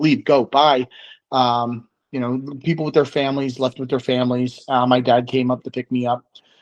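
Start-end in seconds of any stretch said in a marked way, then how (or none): none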